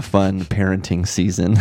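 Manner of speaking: plain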